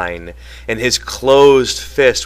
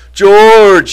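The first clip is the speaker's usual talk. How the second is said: shrill, very high, very loud terrified cry; 10 semitones higher, 11 dB louder than usual. Lenny, being hit by Curley, calls out to George; cried out in terror. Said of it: "he cried".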